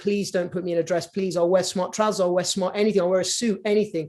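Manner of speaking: usual speaking voice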